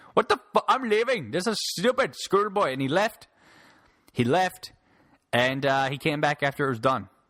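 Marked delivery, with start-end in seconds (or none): 0.2-2.7 high-pitched put-on Indian accent. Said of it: "he actually speaks like that".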